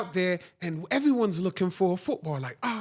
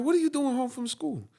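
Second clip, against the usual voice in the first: put-on heavy, thick Jamaican accent, old woman voice, pitched up; 6 semitones higher than usual. Speaker quotes their grandmother when they ran home, thick jamaican accent. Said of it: "in a thick Jamaican accent".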